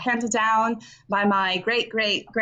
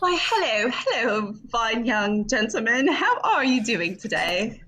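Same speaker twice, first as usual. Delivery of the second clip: slow, refined, genteel delivery; 3 semitones higher than usual. Greeting a young man while trying to sound refined: Kate Middleton voice. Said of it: "You're like Kate Middleton, trying to do Kate Middleton".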